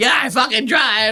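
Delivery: very high-pitched, angry, unhinged freak-out. Retelling a comedian's reply to a heckler: imitating someone freaking out. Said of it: "he starts freaking out on the guy".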